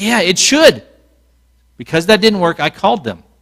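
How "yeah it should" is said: yell, pitched higher. Retelling talking back to a tv plea for money: imitating own yelling. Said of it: "So I'm yelling at the T V".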